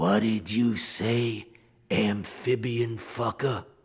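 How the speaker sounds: hissed, threatening, menacing delivery. A narrator reads one character hissing at a soprano player, hissed. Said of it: "Alley Boy hissed".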